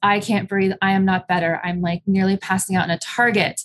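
usual speaking voice

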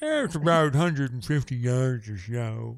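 put-on acted tipsy voice. Redoing a Bill Murray line after a failed first try: Bill Murray drunk voice. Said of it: "he's more of a drunk voice".

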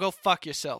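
put-on Boston accent. Discussing The Departed with another speaker, quoting Mark Wahlberg, Mark Wahlberg Boston impression. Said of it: "that was my boston impression".

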